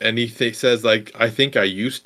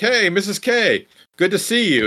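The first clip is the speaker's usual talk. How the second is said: cheery, happy, upbeat sing-song voice; 8 semitones higher than usual. Retelling a film scene where a wounded student greets a mother: imitating an upbeat greeting. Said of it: "actually upbeat and kinda happy to see her".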